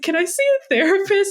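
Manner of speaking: acted sobbing, very high-pitched, tearful pleading tone. Retelling asking a receptionist for a therapist, imitating bawling while asking. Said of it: "I'm like bawling my eyes out".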